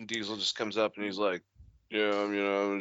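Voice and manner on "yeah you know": put-on flat monotone voice, quieter. Imitating Vin Diesel joining a talk about tequila: monotone Vin Diesel impression. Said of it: "sounds like a monotone fucking Sylvester Stallone".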